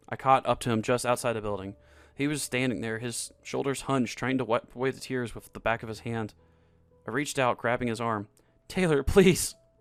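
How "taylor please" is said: begging, pleading tone. Reading a story aloud, the narrator grabs his arm: begging. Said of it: "I begged".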